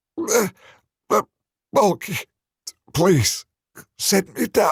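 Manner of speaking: very high, strangled, strained croaking voice. Narrator reads Charlie, dangling by the throat from someone's hand; croaking. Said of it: "Charlie croaked out".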